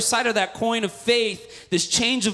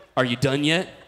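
mock needling sat-nav voice, lower; 6 semitones lower than usual. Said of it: "kept jabbing at you".

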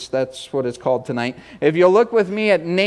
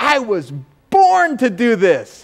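high, big, happy, acted-out little-kid excitement; 6 semitones higher, 4 dB louder than usual. Retelling what Carissa said when she came in early, imitating Carissa's excited voice. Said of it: "the big, excited voice".

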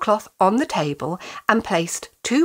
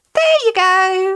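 cheerful, happy, very high, raised voice; 10 semitones higher, 6 dB louder than usual. Reading a story, a woman throws barley into the pan herself: happy. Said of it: "she said happily".

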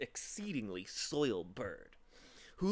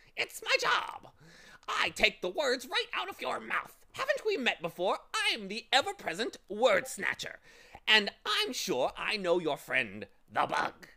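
very high, loud, shrill cackling bird voice; 9 semitones higher, 5 dB louder than usual. Narrator reads the bird answering Tok's irritated complaint; cackling bird voice. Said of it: "he cackled".

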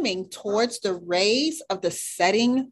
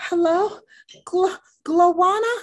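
spluttered, sputtering delivery; 7 semitones higher, 3 dB louder than usual. A shark says hello to a newcomer, spluttering. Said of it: "he spluttered".

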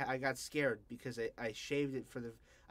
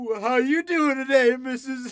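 mock tearful crying delivery, higher and louder; 12 semitones higher, 18 dB louder than usual. Retelling own goofy lines said through tears: imitating crying through lines. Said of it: "I did my goofy lines through tears".

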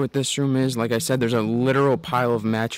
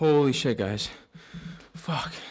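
breathless, winded exclamation, short of air; 3 semitones higher, 4 dB quieter than usual. Having just climbed many stairs, talking to the guys; out of breath. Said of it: "I'm out of breath".

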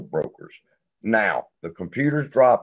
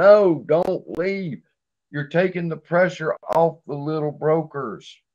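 re-enacted shouting; 8 semitones higher than usual. Retelling how they screamed at people leaving the little brokers, retelling own screaming. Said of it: "And I'm screaming".

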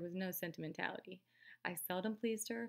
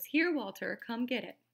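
impatient, raised, calling voice; 4 semitones higher, 7 dB louder than usual. Narrator reads a character offering a refused quarter a second time: impatient. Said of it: "Impatience crept into Miss Caroline's voice".

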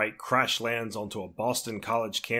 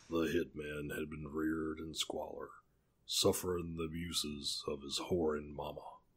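deepest low, deep put-on voice; 6 semitones lower, 11 dB quieter than usual. Reading a passage about a hitman, trying it with a deep voice. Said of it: "I'll try to do it since I got a deep voice".

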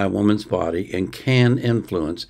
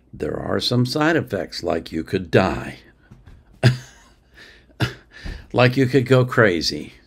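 plain

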